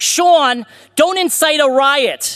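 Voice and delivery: put-on drawn-out New Jersey accent, high and very slow. Quoting a mother's warning before the speech: New Jersey accent. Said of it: "I'm gonna do this in a New Jersey accent".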